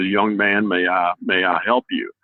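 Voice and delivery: deep-voiced Texan drawl. Retelling what a man said on walking up to him, deep Texas drawl. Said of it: "with a big Texas drawl and a deep voice".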